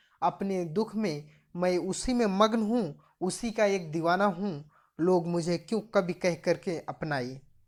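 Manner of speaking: ordinary talk, nothing marked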